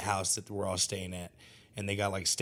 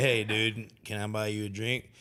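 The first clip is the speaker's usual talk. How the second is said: put-on cowboy voice. Retelling offering a drink to a shy musician: Woody voice. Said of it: "big old fucking goddamn Woody energy".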